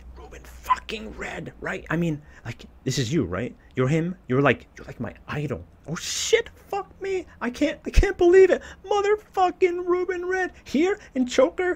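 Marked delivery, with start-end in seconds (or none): 0.2-4.2 excited, swooping whisper-shout. A narrator recognizes his idol and speaks to him, in an excited whisper-shout. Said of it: "I whisper shout to keep my excitement going".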